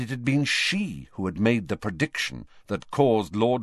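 ordinary delivery

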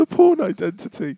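high, embarrassed voice rising in pitch. Reading out embarrassing parody film titles, in a high embarrassed voice. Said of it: "my voice goes high when I'm embarrassed".

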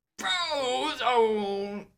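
put-on very high, long drawn-out old-man yell. Imitating a line from a movie: old man Craig T. Nelson yelling. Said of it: "It sounded like old man Craig T. Nelson".

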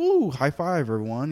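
acted-out high, drawn-out celebratory whoop. Retelling how mom announced good health news at family dinner: imitating mom's cheering. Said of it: "she said it like".

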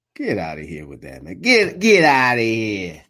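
put-on New York accent. Calling a game on a show: put-on New York accent. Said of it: "Gotta get my New York sound accent".

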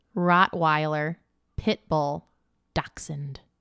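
said slowly. Answering a quiz prompt with three dog breeds: said slowly. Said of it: "look how slow I said 'em".

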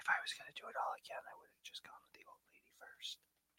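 very hushed, confiding whisper close to the mic. Answering another speaker into a recording microphone: whispering. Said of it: "Don't whisper it".

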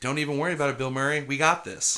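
usual speaking voice

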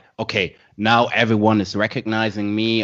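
ordinary talk, nothing marked

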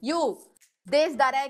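put-on thick Russian accent. Quoting how a woman spoke English, in heavy Russian-accented English. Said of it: "ela falava um inglês também tipo muito carregado do russo".

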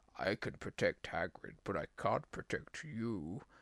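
deep, low, slow masked villain voice. Retelling a movie scene where the spider speaks, in Bane voice. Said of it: "You've given him Bane's voice".

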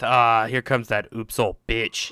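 very slow muttered aside, dragged out. Retelling what the Walmart employees say: imitating someone muttering under breath. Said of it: "they're saying under their breath".

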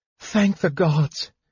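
breathing the words. Tika speaks as Tasselhoff's eyes finally open, breathing the words. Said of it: "Tika breathed".

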